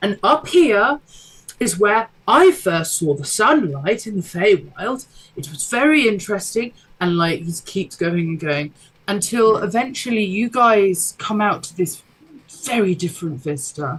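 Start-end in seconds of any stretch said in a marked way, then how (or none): 0.0-6.7 awkward tour guide voice, higher. Voicing a character leading the party: awkward tour guide voice. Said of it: "the most awkward tour guide".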